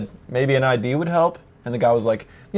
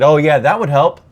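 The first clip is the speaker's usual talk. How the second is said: mock, put-on condescending, know-it-all tone; 3 semitones higher, 5 dB louder than usual. Retelling a man's reply about showing ID: mimicking a condescending tone. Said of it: "he almost had a tone of like, you should have known".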